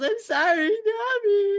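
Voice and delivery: mock very high sobbing yell, one word drawn out. Narrating a comic panel, the speaker voices Zeus apologizing to Nami: Zeus crying yell. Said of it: "and Zeus yells".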